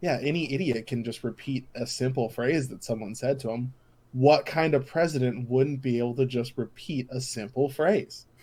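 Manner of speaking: ordinary delivery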